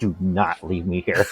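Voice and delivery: fierce, violent, hushed half-whisper, very close to the ear. Voicing a character grabbing a friend's arm: violent half-whisper in the ear. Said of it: "Just whispers it, like, violently in the ear".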